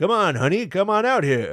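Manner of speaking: sleazy smooth-talker voice, pitched a touch high. Imitating a movie character who talks like a Simpsons scuzzball: Hank Azaria Simpsons scuzzball voice. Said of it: "he talks like, uh, Hank Azaria's character".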